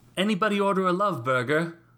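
put-on British accent. Quoting a film character who normally speaks with an american accent: faux british accent. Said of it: "he says in a faux British accent".

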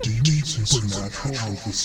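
very quiet, low, hushed half-whisper. In a role-play scene, a character speaks through an evil spirit's half-whispers, half-whispering. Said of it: "you hear [name] whisper".

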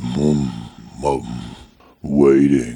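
low, eerie creature voice.

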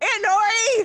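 shouting. Calling out to an aunt across the room: yelling. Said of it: "you don't need to yell".

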